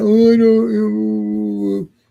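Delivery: moping, very slow, sulky drawn-out oh. Retelling a scene where Giant Man acts sulky: imitating sulky Giant Man. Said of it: "acting all sulky".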